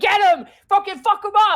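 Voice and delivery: very high, shrill, rowdy, screaming crowd hollering. Voicing the audience watching a fight: crowd screaming loud. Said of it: "people are screaming loud".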